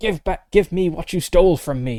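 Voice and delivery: menacing, angry, hissing ghostly spirit voice. Game master voices an angry spirit confronting the players, hissing. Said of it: "it hisses at you".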